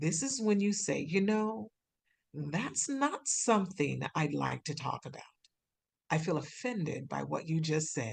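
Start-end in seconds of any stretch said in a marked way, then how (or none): 2.3-8.1 composed, on-air radio-announcer style delivery. Showing how to respond to an offensive remark, using a radio voice. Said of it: "just take a deep breath and use your radio voice".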